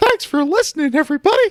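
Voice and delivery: very high, loud cartoon voice. Voicing Jim signing off, the way she imagines him: Mickey Mouse voice. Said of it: "it's perfect".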